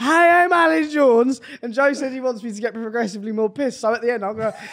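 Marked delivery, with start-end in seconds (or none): 0.0-1.4 put-on slow, raised, fed-up voice with a Welsh accent. Retelling how Mum does a Welsh impression: Alex Jones impression in Welsh accent. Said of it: "Mum can do a really good, obviously, Wel-, Welsh impression".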